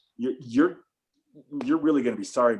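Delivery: ordinary delivery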